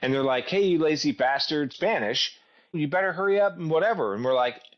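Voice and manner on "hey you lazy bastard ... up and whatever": put-on yelling as a light, high jeer. Retelling how men in a truck yelled at the team: imitating men yelling. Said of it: "yelling at us".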